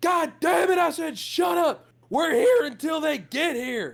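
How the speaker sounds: very high-pitched furious, angry yell. Voicing Holb snapping back at a guard: angry shout. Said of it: "Holb kinda looks down, he goes".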